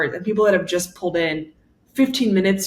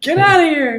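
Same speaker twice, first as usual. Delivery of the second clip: mock yelling, pitched higher and louder; 9 semitones higher, 5 dB louder than usual. Retelling how a woman in a parking lot told them to leave: imitating a woman yelling. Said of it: "the woman who was yelling at us".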